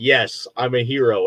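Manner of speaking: ordinary talk, nothing marked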